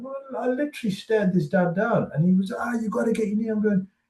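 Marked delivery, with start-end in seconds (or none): 2.5-3.5 acted-out screaming, yelled loudly. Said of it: "literally screaming".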